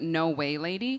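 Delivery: "no way, lady" said low with falling pitch.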